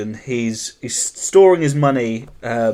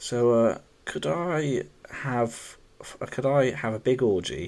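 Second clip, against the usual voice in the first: slow, hushed half-whisper under the breath; 10 dB quieter than usual. Acting out a customer asking the lady at the desk: half-whispering as a customer. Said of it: "just whispered to the".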